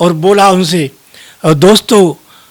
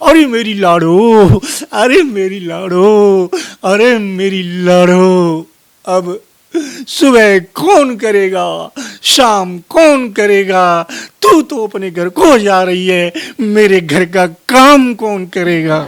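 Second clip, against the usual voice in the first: mock mother's tearful keening, wailing, crying lament. Storyteller voicing a girl's mother as she wails even louder, mock loud wailing. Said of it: "और जोर से डकराई".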